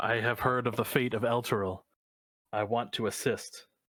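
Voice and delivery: echoing, flowery character voice. A player voices their character reaching out to grab the trapped shield; echoey, flowery voice. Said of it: "a very echoey, very flowery voice".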